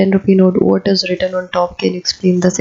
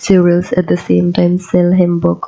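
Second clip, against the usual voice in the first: ordinary talk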